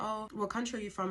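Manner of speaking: ordinary talk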